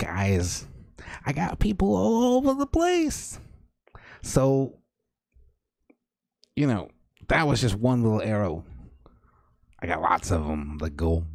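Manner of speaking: rough but squeaky, small, swooping rat voice. Game master voicing a rat-folk figure answering a player, in a small squeaky voice. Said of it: "So the little rat folk person steps out from the shadows, ... Okay, so what you hear then are very sort of rough but squeaky kind of voices that start, ... And in a little squeaky voice that I have not yet mastered".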